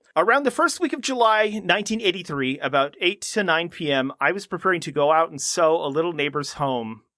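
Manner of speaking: plain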